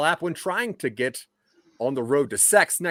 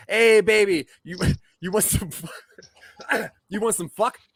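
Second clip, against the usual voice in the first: giggling through words, higher pitch; 5 semitones higher than usual. Reading out an example opening line, laughing while talking. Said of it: "I was just laughing".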